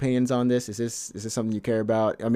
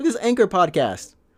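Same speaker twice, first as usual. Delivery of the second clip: high, loud yell right into the microphone; 9 semitones higher, 3 dB louder than usual. Showing another speaker a podcast, yelling into the mic. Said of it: "yelling into the mic".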